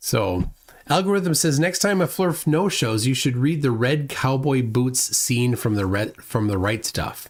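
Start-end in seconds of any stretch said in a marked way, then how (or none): none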